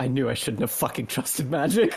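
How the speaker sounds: low, grumbling mutter under the breath. Voicing a character as the magic runs out on spells: muttering under her breath. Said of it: "mutters under her breath".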